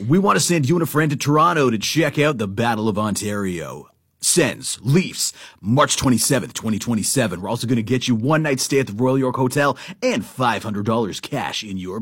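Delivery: radio announcer voice. Speaking to a listener, doing the whole thing in the announcement voice. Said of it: "I'm just going to do the whole thing in the announcement voice".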